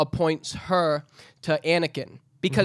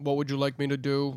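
put-on flat, monotone droid voice, quieter; 2 semitones lower, 4 dB quieter than usual. Imitating the droid that worked for Count Dooku: imitating a monotone droid. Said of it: "was very monotone".

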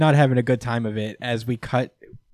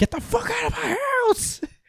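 very high, cracking, furious yell. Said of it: "he rightfully is just like".

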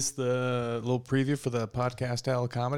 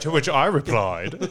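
put-on British butler voice, louder; 7 dB louder than usual. Joking about a butler saying the phrase: British butler voice. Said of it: "The butler go".

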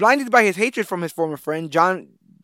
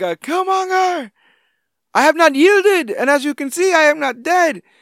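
play-acted defiant yelling, very high, slow, drawn out; 11 semitones higher, 4 dB louder than usual. Retelling a movie scene to the others, imitating someone yelling. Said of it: "But him yelling".

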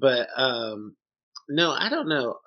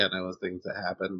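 usual speaking voice

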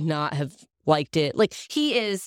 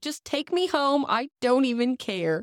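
play-acted tearful bawling, high, words dragged out; 9 semitones higher than usual. Recounting bursting into tears in the middle of Menards, retelling bawling. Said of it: "I'm bawling".

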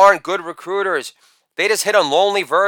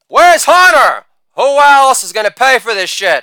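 loud holler, raised pitch; 6 semitones higher, 7 dB louder than usual. Retelling what his biker bud extras yelled at Molly Malone's, retelling a yell. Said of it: "the Sons of Anarchy yell".

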